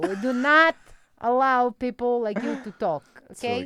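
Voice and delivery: put-on Albanian-accented motherly woman's character voice. Performing a character on request for the wrap up: Albanian mom character voice. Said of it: "I did an Albanian mom character".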